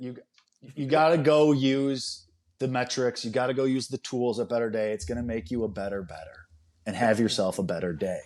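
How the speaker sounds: snide, sarcastic, mocking sales-pitch voice. [name], told to tell people about Better Day, mocking Colby's sarcastic promo. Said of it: "the best impression of my sarcasm".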